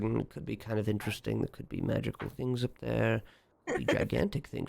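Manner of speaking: quiet muttering under breath. Voicing a character in the game, muttering under his breath. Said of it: "He's kind of under his breath".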